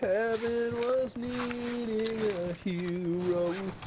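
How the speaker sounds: high, very slow, mock heroic solemn tone.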